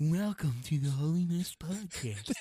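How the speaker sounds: slightly creepy host voice. Redoing the podcast welcome line: creepy-sounding welcome. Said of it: "That sounded a little creepy".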